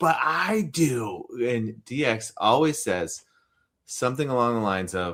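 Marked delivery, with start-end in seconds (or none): 0.0-1.2 put-on, high, fed-up, exasperated scream. Retelling a habit of answering a podcast host: imitating a scream. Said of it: "I am screaming at you".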